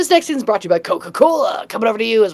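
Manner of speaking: sportscaster sports announcer delivery. Describing a comedy show's bits, the speaker mimics its sports announcer voice. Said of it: "it sounds like a sports announcer".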